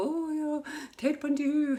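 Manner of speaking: high, gushing starstruck fangirl voice. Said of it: "fangirl over them".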